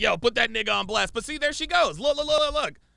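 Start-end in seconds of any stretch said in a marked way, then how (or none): 0.0-1.1 rough, creaky calling voice. Mimicking a friend who keeps urging someone on: imitating Ak. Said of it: "Ak is like".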